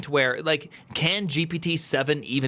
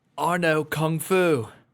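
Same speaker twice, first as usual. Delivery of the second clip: slow, deliberate, measured delivery. Showing the only accent that can be done: Keanu Reeves impression. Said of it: "I don't think I could do Ke-, Keanu beyond".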